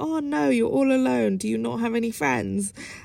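playful, jokey, teasing, put-on sympathy and pity. Retelling how a guy in a club mocked the speaker for being alone: mimicking a jokey tease. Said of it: "he said it in a jokey way".

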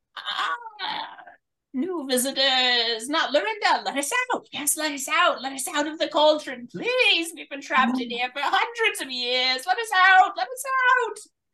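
muffled, very high-pitched voices. Voicing those trapped inside a lidded cauldron, heard from within: muffled voices from inside cauldron. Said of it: "you can hear muffled coming from inside the cauldron".

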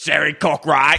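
booming, deep Cockney man's voice. Acting out a heavenly figure calling Sherry: booming Cockney man's voice. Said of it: "She's Cockney".

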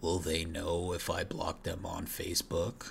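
dull, repeated zombie groan. Describing dumb zombies repeating their last thought, in a groaning zombie voice. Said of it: "he'll be groaning over and over".

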